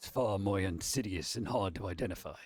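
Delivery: very deep, low, grim and ominous narrator voice. Repeating a friend's remark on request, speaker says it in the Darkest Dungeon voice. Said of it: "say it in the darkest dungeon voice".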